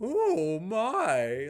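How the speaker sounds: put-on, high, posh-sounding British accent. Mocking people who fake a fancy British accent: put-on fancy British accent. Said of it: "go out of their way to talk with a British accent".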